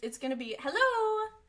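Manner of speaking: jittery, squeaky, nervous voice, very high-pitched. Kicking off a recording while feeling nervous: nervous high-pitched voice. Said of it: "That was so high pitched. I get really high pitched when I'm nervous".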